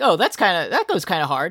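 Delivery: ordinary talk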